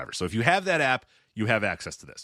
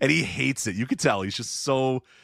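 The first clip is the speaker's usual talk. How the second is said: normal talking voice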